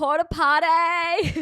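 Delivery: put-on accented, high, potty stretched out. Retelling how Abby says a line: imitating Abby's accent. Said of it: "The way Abby's accent comes out".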